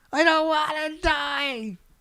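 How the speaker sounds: high, drawn-out mock terrified scream.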